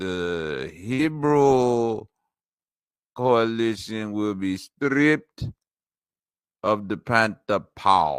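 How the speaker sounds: character voice with a drawn-out first word. Speaker announces he must get into his Shango voice, then speaks in it. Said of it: "I must get into my Shango voice".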